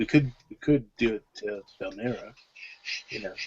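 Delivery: hushed, low, very quiet, subdued voice. A player speaking in character at the game table suggests a plan, in a subdued voice. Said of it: "in a more subdued voice".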